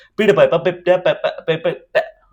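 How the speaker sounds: rushed, stuttering speech. Teaching about tongue twisters, showing how people say one too fast: fast, stumbling tongue twister. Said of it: "this is how they end up speaking about it if they speak fast".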